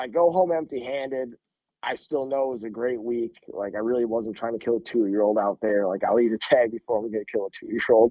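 plain

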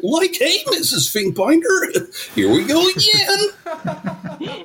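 very high, slow voice that cracks. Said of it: "my voice cracking like Shaggy".

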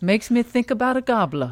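mock sophisticated Southern accent. Teasing another speaker about their retelling, echoing it in a sophisticated Southern accent. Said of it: "You're making him sound way more like sophisticated Southern".

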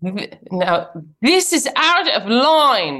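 fake Australian accent, high, very slow, drawn out. Performing a catchphrase on cue after "Action. Accent.": put-on Australian accent. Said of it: "that was more Australian than the first one".

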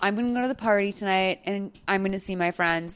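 put-on calm, plainly spoken, even delivery. Retelling a woman's plain statement to her friend, imitating a calm, plainly spoken delivery. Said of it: "Allie says it so calmly and so, like, plainly spoken".

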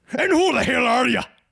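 put-on Northern Irish Belfast accent. Retelling what a night guest heard, the speaker quotes a man in a Belfast accent. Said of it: "a man with a Belfast accent asked".

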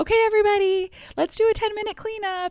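mock sweet, sugary, passive-aggressive, very high voice. Retelling her own words to everyone at home about cleaning the room: retelling a passive-aggressive sweet tone. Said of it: "a very passive aggressive yet sweet voice".

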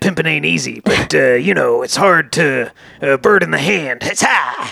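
put-on rambling cult leader voice. Imitating Charlie after a quote about him: Charles Manson impression. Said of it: "how well you're doing that little impression".

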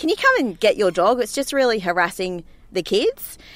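ordinary talk, nothing marked

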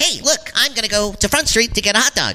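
high cartoonish voice.

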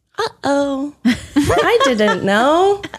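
feigned naive innocence in a high voice. Speaker recalls counting on seeming innocent, acting out playing innocent. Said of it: "I definitely was bargaining on being an innocent".

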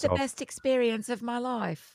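put-on delicate, soft, dainty posh English accent. Mimicking a losing contestant speaking on camera, in a dainty English accent. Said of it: "your English accent is very dainty".

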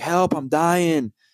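high, frantic, panicked scream. Recounting running into the ER during a panic attack, retelling screaming for help. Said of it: "And I'm like screaming".

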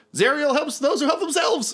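shrill, high, in-character shout. Voicing a fleeing character calling back while running off: yelling in character. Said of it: "so he yells".

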